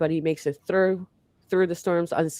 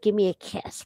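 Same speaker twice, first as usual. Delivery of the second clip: nasty, mean crazy-aunt voice; 3 semitones higher than usual. Picturing someone as a crazy aunt begging for a kiss: imitating a nasty crazy aunt. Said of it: "the crazy aunt sucking on a lollipop and all nasty".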